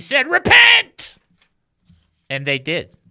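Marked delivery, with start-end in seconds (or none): 0.3-1.2 very high, booming, loud proclaiming voice. Retelling the apostle Peter addressing the crowd: loud voice. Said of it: "in a loud voice".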